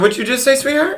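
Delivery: sweet high sing-song voice.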